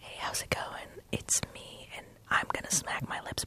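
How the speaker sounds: breathy, soft, close-mic ASMR whisper. Explaining to the folks at home what ASMR is by demonstrating it, ASMR-style voice. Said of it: "It's more like".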